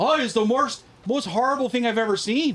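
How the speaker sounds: put-on Canadian accent, drained of gravitas. Retelling a man on an Unsolved Mysteries episode, imitating an Ontario accent. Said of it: "the accent took me like took all the gravitas".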